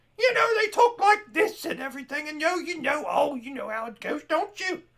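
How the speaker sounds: shrill, very high, loud shrieking woman's voice. Speaker demonstrates how the character Wynonna typically sounds, in Wynonna's voice. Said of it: "That's how Wynonna sounds typically".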